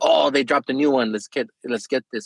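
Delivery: ordinary talk, nothing marked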